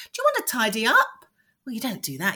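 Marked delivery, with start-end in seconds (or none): 0.0-1.1 question-like upward lift at the end on up. Showing the tone to avoid when asking to tidy up: rising like a question. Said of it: "tone of voice doesn't go up in an inflection, which sounds like a question".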